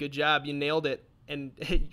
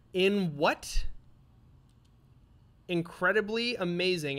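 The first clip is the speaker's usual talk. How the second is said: slow, sarcastic, over-the-top admiring voice; 4 semitones higher than usual. Asking a Zelda quiz question, calling the title amazing: sarcastic. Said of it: "I'm saying this sarcastically".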